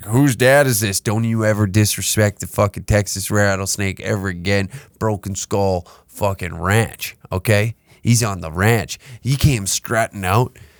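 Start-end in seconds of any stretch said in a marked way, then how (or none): none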